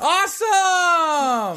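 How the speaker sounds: very high, drawn-out, over-the-top fake enthusiasm. Tired co-host making up for sounding unenthusiastic about the reading: exaggerated enthusiasm. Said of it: "I'm making up for my enthusiasm".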